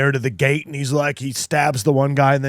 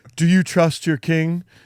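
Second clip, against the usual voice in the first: put-on self-loathing king voice, higher pitched; 3 semitones higher than usual. Retelling a movie scene where the king asks about trust: imitating a self-loathing king. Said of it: "he's doing his self-loathing".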